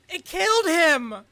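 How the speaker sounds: very high, very loud, shrill emotional shout. Delivering a scripted line after being reminded to put emotion in it: with emotion. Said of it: "emotion in your voice".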